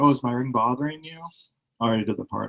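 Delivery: polite, courteous tone. Retelling what the dentist asked about her ring: imitating a polite dentist. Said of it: "my dentist was really polite about it".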